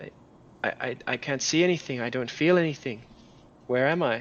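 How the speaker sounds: put-on small, very young little-girl voice. Playing a lost character who wakes unable to see or feel, in a very young girl's voice. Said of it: "the voice of a very young girl".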